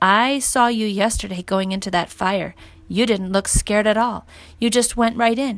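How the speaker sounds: plain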